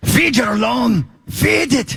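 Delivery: put-on Irish or Scottish accent. Asked by friends to show an Irish or Scottish accent, he tries it. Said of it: "Do you have like an Irish or Scottish accent".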